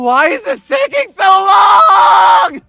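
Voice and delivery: very high, very loud, slow, drawn-out anime yelling. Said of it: "Very anime".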